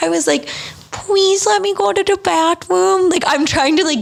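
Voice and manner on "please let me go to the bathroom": put-on baby voice. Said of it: "guilt trip the nurse with my baby voice".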